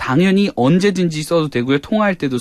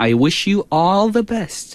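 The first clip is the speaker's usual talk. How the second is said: heavy stress leaning on the word all; 2 semitones higher than usual. Teaching a holiday greeting in English, with stress on the word all. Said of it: "all을 강조하면 더 좋아요".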